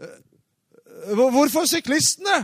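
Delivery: high, loud, puzzled, confused voice.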